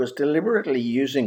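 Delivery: ordinary delivery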